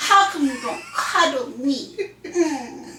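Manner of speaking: mock breathy baby voice, whiny. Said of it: "I love when you do that voice".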